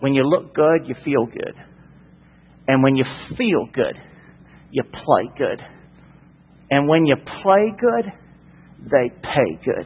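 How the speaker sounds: put-on North Carolina accent with swooping pitch. Quote a man from North Carolina explaining why he dresses nice, imitating a North Carolina accent. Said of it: "I'll say it in his accent".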